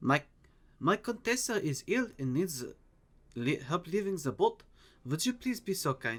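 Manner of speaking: put-on speaking in German accent. Narrating a scene, voicing a woman asking for help for her Contessa, in a German accent. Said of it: "she says in a German accent".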